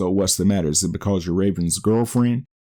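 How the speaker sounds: ordinary talk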